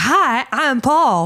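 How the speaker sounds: high, little cartoon monkey character voice. Recalling an ad after Jimmy Neutron on Nickelodeon, doing a one-eyed cartoon monkey voice. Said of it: "a little a monkey with one eye".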